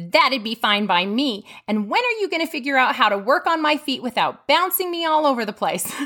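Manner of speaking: surly, gruff, growling grumble. Retelling a patient's reply after the aide left in tears, imitating a growl. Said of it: "She growled".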